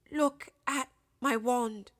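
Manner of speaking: unsteady, quavering, shaky, trembling voice. Narrator reading Ron's words to Harry after the crash, in a shaky voice. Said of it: "said Ron in a shaky voice".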